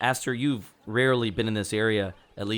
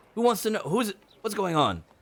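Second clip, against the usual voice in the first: high, alarmed, panicky scramble, very high outburst; 10 semitones higher than usual. A character is asked whether he is a cleric, panicky. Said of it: "He looks a little panicky".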